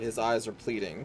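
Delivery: ordinary delivery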